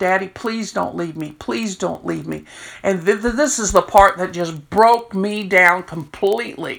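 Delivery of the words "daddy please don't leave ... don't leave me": tearful, crying, begging wail. Retelling a young man on the phone to his dying father: retelling someone crying. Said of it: "he was crying".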